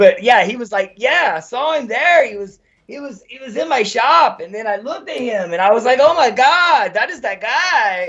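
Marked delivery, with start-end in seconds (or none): 1.0-8.1 put-on Spanish accent, pitched up, "guy" drawn out.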